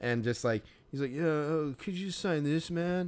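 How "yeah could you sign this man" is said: mock, high, feeble, wobbly, shaky stoned-sounding voice. Retelling what a guy asked for a signature: imitating a feeble, shaky stoned voice. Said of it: "in this feeble, like, shaky, fucking, like, stone voice".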